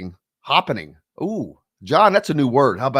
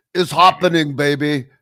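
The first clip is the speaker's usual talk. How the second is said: fake, put-on Austrian accent, pitched higher; 3 semitones higher than usual. Joking about a mixed-up word, repeating it in a put-on Austrian accent. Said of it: "Like Austrian or something".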